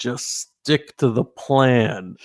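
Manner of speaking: theatrical stage-whispered aside. A player, escorted into the offices, tells companions to stick to the plan, stage whisper. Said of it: "I'm going to do a little stage whisper".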